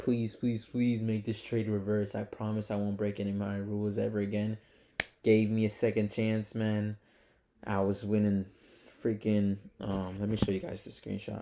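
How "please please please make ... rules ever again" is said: normal talking voice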